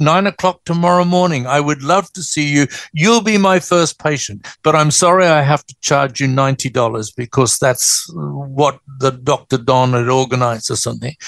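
ordinary delivery

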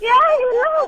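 put-on wailing.

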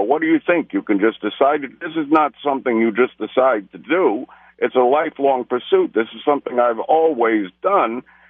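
normal talking voice

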